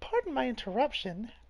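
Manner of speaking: high cartoon-mouse voice. Game master voicing a halfling girl interrupting the adventurers, Mickey Mouse-like voice. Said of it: "that's more Mickey-ish".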